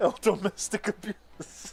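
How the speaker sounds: speech broken by laughter. Trying to get a joke out to the others, laughing while talking. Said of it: "I can't even get the joke out".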